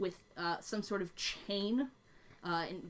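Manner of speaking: ordinary delivery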